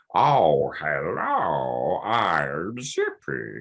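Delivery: slow, deliberate, pronounced puppet voice, I'm drawn out. Describing the original performer's version, the speaker demonstrates a Zippy voice, slow and pronounced. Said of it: "his Zippy voice was slightly a bit like this".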